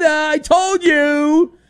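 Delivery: high, slow, drawn-out mock outburst.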